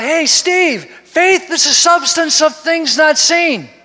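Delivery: high, ringing, full calling-out shout. Acting out a scripture line as Paul calls out: Paul yelling. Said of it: "yells out".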